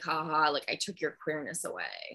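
put-on joking tone. Retelling what a man jokingly said to a woman he was sleeping with, retelling a joking remark. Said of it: "like jokingly".

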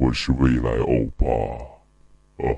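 very deep, low voice altered by sound effects. Giving the audience one more example, special-effect voice. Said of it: "再给你们来一个啊".

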